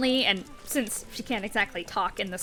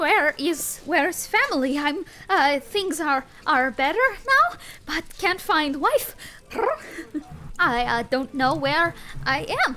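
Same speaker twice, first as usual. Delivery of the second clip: tiny, small, high little creature voice; 6 semitones higher than usual. Narrating what players hear after casting Speak to Animals, Nibble's small little voice. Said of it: "Nibble's like small little voice".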